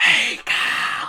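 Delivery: theatrical, loud stage whisper. Acting out someone calling to Kyle from across the room in a stage whisper. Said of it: "and stage whispers".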